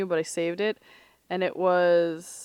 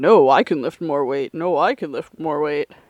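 mock boastful arguing between two voices, louder; 3 semitones lower, 6 dB louder than usual. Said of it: "battling it out to be like".

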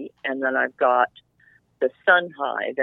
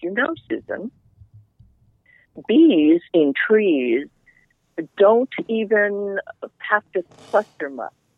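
put-on friendly, loud, pitched-up German accent; 7 semitones higher, 5 dB louder than usual. Retelling what Mikhail said while they were talking, Mikhail's German accent. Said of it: "in his wonderful German accent".

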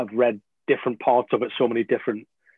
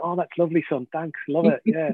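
put-on polite, lukewarm, dutiful tone, pitched up; 5 semitones higher than usual. Comparing praise to a dad given socks for Christmas, imitating dad thanking for socks. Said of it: "in that same tone of voice as when you get your dad a pair of socks".

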